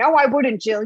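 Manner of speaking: acted-out, screaming voice. Acting out her mother screaming back at the tv, imitating her mom screaming. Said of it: "she's screaming at the TV".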